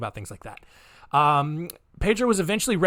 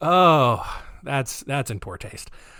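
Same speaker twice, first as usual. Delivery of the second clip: plain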